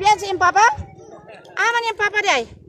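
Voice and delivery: high-pitched, loud calling out.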